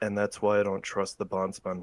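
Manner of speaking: voice dropped low. Narrator voicing a character as he leans in closer, lowered voice. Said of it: "sort of lowers his voice and leans in".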